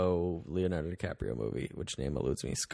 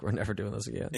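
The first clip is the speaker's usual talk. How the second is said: normal talking voice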